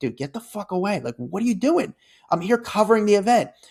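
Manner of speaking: high, fed-up, exasperated, frustrated voice. Retelling a confrontation with a guy blocking the camera: retelling own frustrated words. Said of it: "kinda frustrated".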